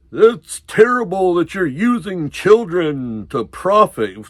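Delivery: mock high-pitched scolding yell. Retelling a man who came over yelling at the four of them: retelling a man's yelling. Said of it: "he's yelling at the four of us".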